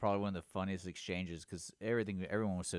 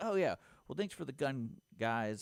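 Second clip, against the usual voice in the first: mock casual, high, breezy, unbothered tone; 6 semitones higher than usual. Retelling what an officer said after taking a found gun: imitating a nonchalant officer.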